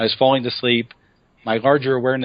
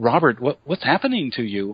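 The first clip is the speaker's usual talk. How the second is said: worried, caring, really concerned voice. Retelling what his wife asked at the breakfast table: imitating wife's concerned voice. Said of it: "in a really, uh, concerned voice".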